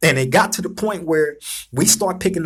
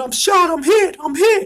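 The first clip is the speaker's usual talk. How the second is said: screaming, higher; 11 semitones higher than usual. Retelling how a man shot in a prison riot fell: imitating someone screaming. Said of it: "he fell to the ground screaming".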